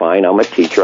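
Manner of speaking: normal talking voice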